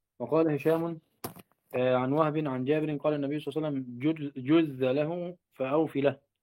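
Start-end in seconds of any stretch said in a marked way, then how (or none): none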